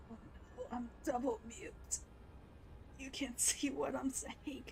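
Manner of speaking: hoarse, rough, raspy, hushed whisper. Voicing a character who speaks, in a raspy whisper. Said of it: "Valkik doing that raspy whisper".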